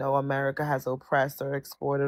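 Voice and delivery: ordinary talk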